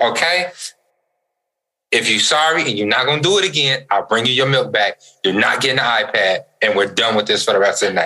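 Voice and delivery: ordinary talk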